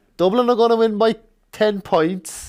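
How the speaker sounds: put-on Dublin accent, pitched very high. Trying out an accent to earn a point in a game, Dublin accent. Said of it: "You're just doing a Dublin accent".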